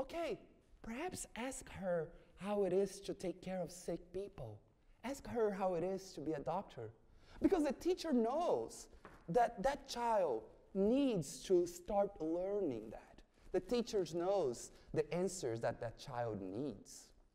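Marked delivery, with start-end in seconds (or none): 0.0-6.9 drops to a little, hushed half-whisper. Retelling how a teacher nudges a child on career day: imitating a teacher half-whispering. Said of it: "kind of like in a kind of little whisper".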